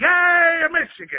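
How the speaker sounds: very high-pitched, shouted stadium-style cheer. Leading a crowd in a Michigan cheer, urging them louder: yelling the cheer. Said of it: "you got to yell louder".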